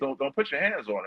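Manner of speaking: yelling. Retelling yelling at a man threatening a woman: imitating own yell. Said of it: "So I'm yelling over at him like".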